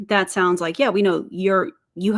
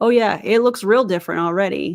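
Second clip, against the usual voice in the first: dry, mocking sarcastic tone. Mocking a company's claim to be different: sarcastic. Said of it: "That's sarcasm, by the way".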